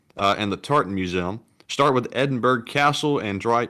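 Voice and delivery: ordinary talk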